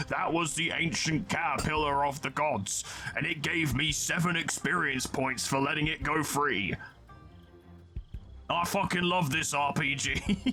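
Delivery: chunky put-on British pub bloke voice, middle-aged. Playing an RPG, the player comments on the game: chunky British pub bloke voice. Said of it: "Whenever I do that voice".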